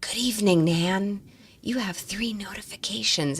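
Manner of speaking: whispering. Quoting what her home device said back at night, whispering. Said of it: "and it whispered to me".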